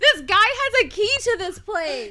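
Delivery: high, loud, horrified laughing wail.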